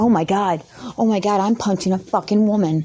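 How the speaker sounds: ordinary delivery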